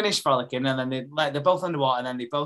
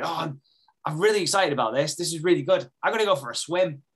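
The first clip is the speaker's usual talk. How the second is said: put-on bubbly, eager little-kid voice; 3 semitones higher than usual. Retelling a scene, imitating Joel like a little kid. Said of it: "proper like a little kid going".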